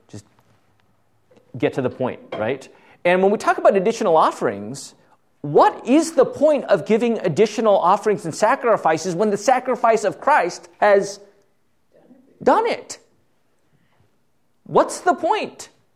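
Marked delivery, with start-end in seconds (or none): 5.4-15.7 slow, high, drawn-out, hammering yell. A preacher speaking to the church, yelling. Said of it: "I don't know why I'm yelling".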